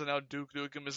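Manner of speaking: ordinary talk, nothing marked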